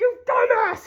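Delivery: mock, very high, screaming outburst. Retelling a scene where the crew members are screaming: imitating screaming. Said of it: "they're screaming".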